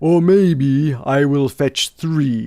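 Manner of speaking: very slow, loud happy rumble.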